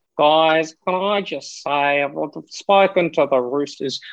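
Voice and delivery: put-on slow, drawn-out, sleazy, seedy old man drawl. Doing an impersonation after a co-host asks for one: Phil Rothfield impression. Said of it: "Give us your seedy old bastard impersonation".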